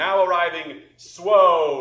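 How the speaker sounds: very loud, booming, high herald voice, "Swoge" stretched. Game master voices a Tiefling announcing an arrival at a doorway, booming voice through a cone. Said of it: "this sort of booming voice".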